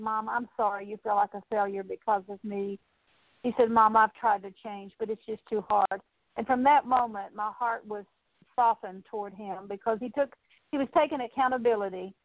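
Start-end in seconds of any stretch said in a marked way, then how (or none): 0.0-2.8 imitated, acted-out humble tone. A mother retells her son's apology on the phone, imitating a humble apology. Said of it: "and he said it so humbly".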